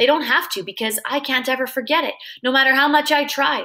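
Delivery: ordinary delivery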